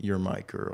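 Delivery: whispered words. Retelling a man hugging a woman and speaking to her, in a whisper. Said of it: "he like whispers like".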